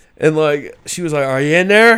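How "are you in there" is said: high, raised hollering yell. Retelling a woman calling out for her dog: imitating a woman yelling.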